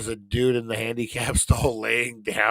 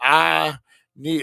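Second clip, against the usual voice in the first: bad put-on Southern drawl, higher and louder; 5 semitones higher, 5 dB louder than usual. Retelling what a guy from Texas said: horrible Southern accent like Forrest Gump.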